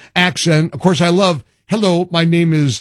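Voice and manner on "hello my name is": put-on thick, heavy Indian accent. Imitating a helper who couldn't fix the problem, in a thick Indian accent. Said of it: "had the thick Indian accent".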